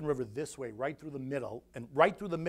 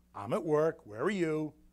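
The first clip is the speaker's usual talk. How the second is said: mock sardonic, sarcastic delivery. Retelling your answer when she asks on the phone where you are, retelling a sarcastic reply. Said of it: "Kind of like sarcastic".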